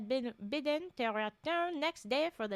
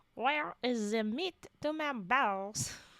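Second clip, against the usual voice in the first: line in a French accent. A player voicing their French character says a line in a French accent. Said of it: "I'm supposed to say this in the accent too".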